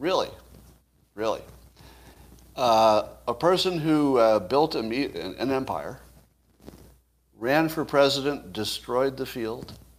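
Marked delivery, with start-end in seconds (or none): 0.0-1.4 sarcastic "really", mocking disbelief. Showing how to test a news claim: sarcastic "really". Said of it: "watch what happens".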